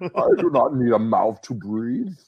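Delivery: very slow, drawn-out put-on voice, each word weighed. Joking about a fighter with his mouth covered: Bane voice. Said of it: "I'm gonna help you do your Bane impression".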